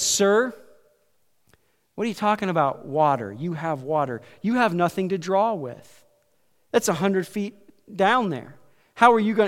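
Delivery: normal talking voice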